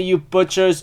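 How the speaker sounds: ordinary delivery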